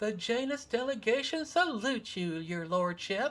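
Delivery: put-on small child piping voice, very high and loud. The janus delegation greeting their lordship, in a small child voice. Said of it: "small child voice".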